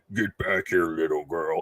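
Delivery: low, put-on horror monster voice. Acting out a horror story, call after the little girl in a monster voice. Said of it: "the monster voice".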